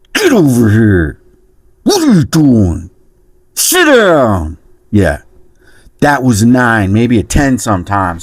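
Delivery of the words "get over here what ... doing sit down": put-on speech through gritted teeth. Recalling how scared he made them, imitating talking through gritted teeth. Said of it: "Talking through his teeth like this?".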